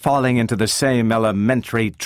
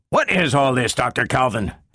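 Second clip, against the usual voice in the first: unfriendly, hostile, antagonistic tone. Lanning confronts Dr. Calvin after she sends Herbie away; hostile. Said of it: "Lanning's voice was hostile".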